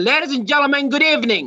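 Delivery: said in a high tone. Demonstrating how to open a speech to an audience, high tone of voice. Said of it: "I began with a high tone of voice".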